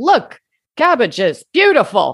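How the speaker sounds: put-on Brooklyn accent, laid on, swooping and animated. Discussing an actress in an early sound film, imitating her Brooklyn accent. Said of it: "you have to hear her Brooklyn sounding voice".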